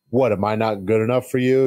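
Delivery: put-on angry, pissed-off voice. Imitating how Johnny sounded after seeing them: imitating Johnny sounding pissed off. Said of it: "you could hear it. He's just like".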